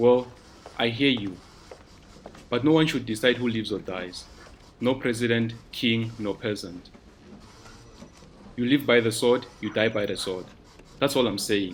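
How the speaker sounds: plain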